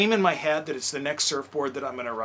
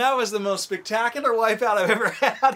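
words bubbling through laughter, raised and pitched up; 7 semitones higher, 5 dB louder than usual. Telling of a surfing wipeout, speaker acts out what he said coming up: retelling laughing while speaking. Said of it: "I came up laughing".

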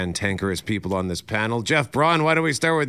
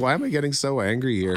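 ordinary delivery

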